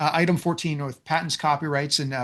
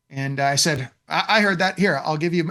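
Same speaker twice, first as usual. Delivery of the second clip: normal talking voice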